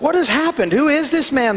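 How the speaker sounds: winded and gasping. A monk rushing up to Quasimodo's side, asking breathlessly. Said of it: "the first monk asked breathlessly".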